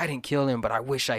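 acted-out rant. Retelling a show character's monologue to people: imitating someone ranting. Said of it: "He goes on this rant".

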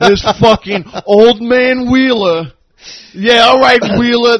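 acted angry, mad voice. Retelling what a fan at the game kept saying: imitating an angry fan. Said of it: "This fucking guy, so mad".

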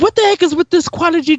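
put-on very high, shrill, angry yell. Retelling complaining about the quality dropping while Jesse giggled, retelling a yell. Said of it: "And I'm just yelling".

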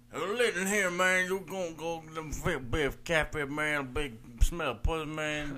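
loud, high put-on old Southern farmer accent.

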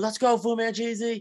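put-on very high, stretched, drawn-out cheering scream. Speaker recalls cheering on a racer they nicknamed Fu Manchu, retelling a scream. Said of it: "I'm screaming".

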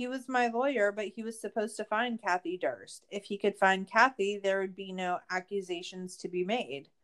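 ordinary talk

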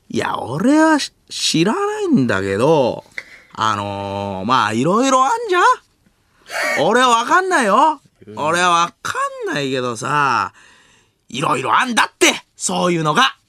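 loose, unconvincing put-on voice, sing-song. Do an impression that is not a good likeness, then admit it. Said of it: "モノマネ中似てないんであれですけど".

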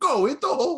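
mock shrill, very high shout. Retelling how dad yelled at the tv during games: imitating someone yelling. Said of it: "he'd start just yelling".

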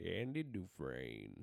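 dropped low and rasped. Trying again after being told to be more raspy: raspier Morgan Freeman impression. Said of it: "You gotta be more raspy".

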